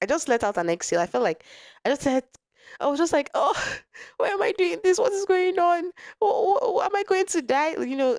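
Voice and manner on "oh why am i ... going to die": put-on very high, tearful, stammering, sobbing wail. Retelling the moment of realizing something was wrong: retelling own crying. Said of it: "I started bawling".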